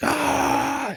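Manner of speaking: very high-pitched creature wail. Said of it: "screaming at".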